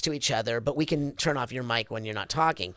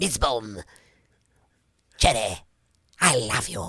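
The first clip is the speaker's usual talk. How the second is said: low-register cartoon character voice; 5 semitones lower than usual. Reading with other actors and doing their characters: Sir Pentious voice. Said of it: "I'll just do that if I'm doing a scene".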